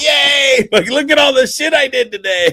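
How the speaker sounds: very high, put-on, excited little-kid cheer, gleeful. Retelling showing off the day's work when she gets home: excitement like a little kid. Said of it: "I'm like a little kid".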